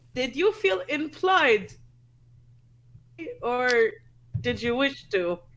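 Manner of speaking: slow, slightly upset, a little hurt in tone. Voicing a character talking to a girl, a little upset. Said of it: "she's, like, really, like, a little upset".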